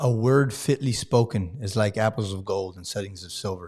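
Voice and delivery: ordinary talk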